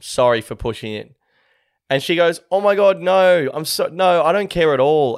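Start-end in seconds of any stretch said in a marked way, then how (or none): 2.5-5.2 very slow, high, drawn-out, gushing apologetic tone. Retelling what a woman said to him at the bar, mock-apologetic. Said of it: "she's like so apologetic".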